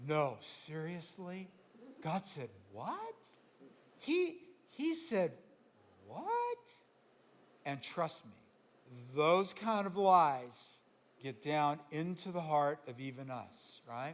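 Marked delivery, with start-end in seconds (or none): 0.1-6.6 incredulous, sarcastic disbelief with swooping pitch. Acting out the tempter's question to Eve: imitating sarcastic disbelief. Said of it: "It's really actually Hebrew sarcasm".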